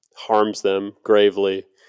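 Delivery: plain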